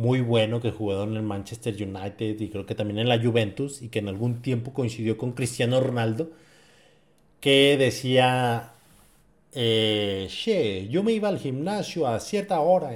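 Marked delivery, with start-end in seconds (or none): 9.5-12.9 slow, drawling, badly done Argentine accent. Quoting the Argentine player Carlos Tevez about going to the gym, bad Carlos Tevez impression, Argentine accent. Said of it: "perdón por mi mal acento argentino".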